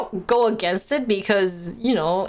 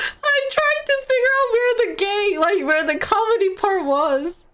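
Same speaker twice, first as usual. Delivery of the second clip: very high voice, words broken by laughter; 12 semitones higher than usual. Apologizing after reading a story meant to be funny, laughing while talking.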